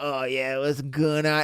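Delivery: mocking put-on way of talking. Mocking how the main guy on Teen Wolf talks: imitating the Teen Wolf main guy. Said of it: "he would talk like this".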